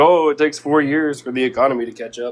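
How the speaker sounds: ordinary talk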